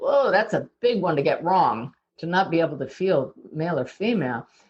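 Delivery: ordinary delivery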